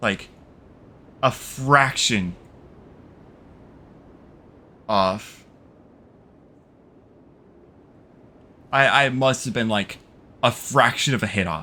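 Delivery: almost crying, on the verge of tears. Recounting slipping up at the last moment in a game: almost crying. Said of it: "I'm almost crying right now".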